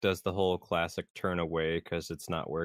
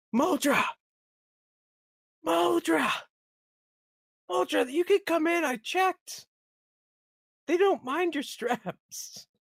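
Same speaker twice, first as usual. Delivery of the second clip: very high-pitched, loud hollering in a character voice; 5 dB louder than usual. Calling in character to a companion far away: yelling in character. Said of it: "And just be like".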